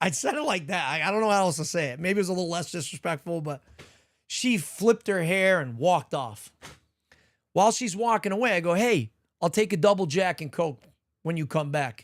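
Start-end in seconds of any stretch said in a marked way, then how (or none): none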